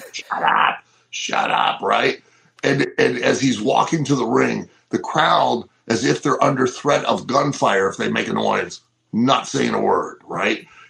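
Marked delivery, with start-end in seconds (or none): 0.1-1.8 put-on slow, stretched-out, drawn-out mild shout. Recounting a man screaming at a silent crowd as he walks to the ring; retelling a top-of-lungs scream. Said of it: "he's screaming at the top of his lungs".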